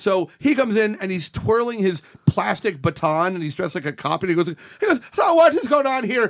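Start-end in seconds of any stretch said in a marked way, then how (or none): 5.1-6.3 higher-pitched Irish brogue. Retelling how an actor dressed as a cop delivered his line: Ron's Irish brogue. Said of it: "are you doing an Irish brogue?".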